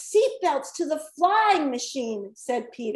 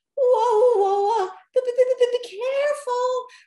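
very high, very slow, nervous, anxious voice; 10 semitones higher, 4 dB louder than usual. A narrator reads a character warning others while flying through the sky, anxious. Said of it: "Rocky said anxiously".

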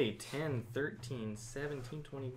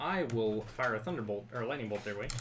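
normal talking voice

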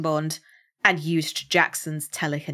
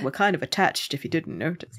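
plain

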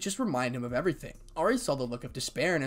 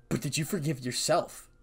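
plain

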